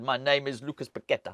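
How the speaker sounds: put-on slipping into a Brazilian accent. Quoting how he introduced himself on West Ham's Instagram, Lucas Paquetá accent impression. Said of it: "Not quite that accent. I don't know why I did that accent".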